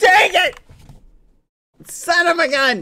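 very high, loud frustrated shouting. Streamer failing again to reach a score of ten, yelling in frustration. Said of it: "I'll stop yelling".

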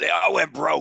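mock shouted call, creaky, high and rough. Retelling an executive in the audience yelling out: imitating someone yelling. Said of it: "One of them yelled out".

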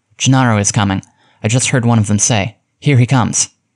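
ordinary delivery

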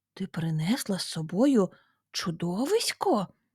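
astonished, surprised tone. Aunt Berg reacts as Lota recoils from her bag: asking in surprise. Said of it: "Здивовано перепитала тітка Берг".

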